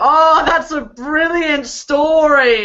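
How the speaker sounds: loud, drawn-out, laughing through the words. A player's character suddenly bursts out laughing in case anyone's watching; laughing while talking. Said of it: "burst out laughing and go".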